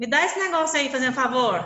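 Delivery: rude, curt, ungentle tone under polite words. Showing a kind word spoken without a kind tone: ungentle tone. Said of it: "a gente usa uma palavra gentil, mas o tom de voz não é gentil. Quer ver?".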